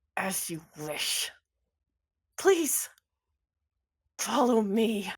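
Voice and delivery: forced out through gritted teeth. Voicing a character who must obey an order: through clenched teeth. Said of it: "through clenched teeth says".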